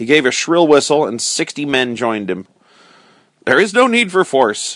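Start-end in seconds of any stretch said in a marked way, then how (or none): 3.5-4.8 stern, high-pitched, sternly spoken delivery. Narrator reading the king's reply to Robin, stern. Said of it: "said the king sternly".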